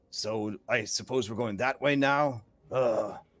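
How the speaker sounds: low grumbling that ends in a groaned ugh. Voicing a character who sees people running into the walls: grumbling. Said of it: "he just kinda grumbles".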